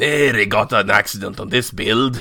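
put-on very thick, broad Scottish accent, laid on. Podcast hosts discussing a series, quoting a character: broad scottish accent. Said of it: "talar med en väldigt bred skotsk dialekt".

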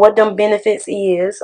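slow, slangy, improper phrasing. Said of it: "I was being real improper".

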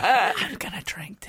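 mock whispered voice. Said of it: "He whispers it in their ear".

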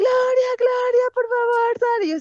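mock very high, drawn-out calling yell. Telling a story, the speaker acts out what a man shouted: retelling a shout. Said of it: "pero él sí gritó".

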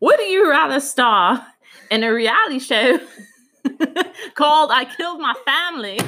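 bad put-on British accent. Asking a would-you-rather question: bad British accent. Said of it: "no one ever asked me to do a British accent".

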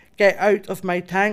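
ordinary talk

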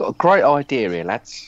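put-on assumed London Cockney accent. Imitating Murdoch phoning Universal, in a put-on Cockney accent. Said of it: "Sorry, he's not Cockney".

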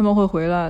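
ordinary delivery

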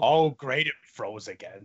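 puppet voice dropped way down deep. Mocking a frozen video call, Oscar the Grouch voice. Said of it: "Great Oscar impression".

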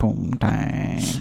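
put-on muttering under the breath. Imitating an uncle at holiday gatherings saying one word: muttering under his breath. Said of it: "says it under his breath".

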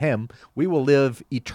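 ordinary delivery

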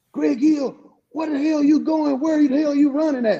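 very high, shrill, coach-style hollering. Retelling the offensive coordinator shouting at a player from the sideline: retelling a holler. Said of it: "was hollering from the sideline like".

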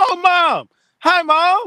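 very high-pitched, slow, stretched-out yell. Speaker greeting Mom after learning she was there, yelling. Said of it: "Why are you yelling?".

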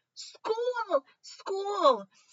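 squeaky, tiny, very high fish voices yelling. Narrator reading a story where the fish in the tank yell, in tiny fish voices. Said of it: "yelling in their tiny fish voices".

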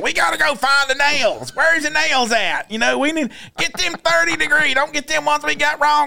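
put-on high hollering, mad-sounding, in a string. Retelling someone in Lowe's, imitating his hollering. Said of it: "He's just hollering about everything".

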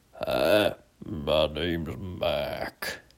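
very low, very deep, soft rumbling dad voice. Telling a story about two brothers, the speaker imitates their dad: Mac's very low voice. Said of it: "I can't even talk as low as Mac talked".

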